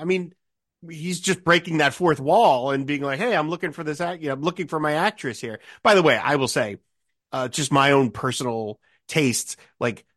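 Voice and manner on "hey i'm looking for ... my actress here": ordinary talk, nothing marked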